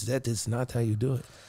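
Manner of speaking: imitated Russian accent. Retelling what a rich clubber said to him: imitating a Russian accent. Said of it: "I don't know if this is even a Russian accent".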